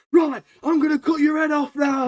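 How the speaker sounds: shrill, very high, abrupt, sudden shout. Retelling a film scene where Tanjiro blurts out his plan: imitating Tanjiro shouting. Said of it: "Tanjiro just shouts".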